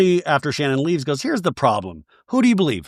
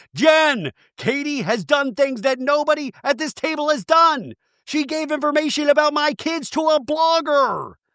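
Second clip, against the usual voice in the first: mock shrill, very high, loud raised voice; 11 semitones higher than usual. Retelling what Emily said to Jen at the table, imitating Emily's loud voice. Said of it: "Emily uses her like yet loud voice".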